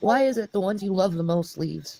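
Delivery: tearful, choked up, barely holding back tears. Saying goodbye to viewers and apologizing: emotional, holding back tears. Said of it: "I'm getting too emotional".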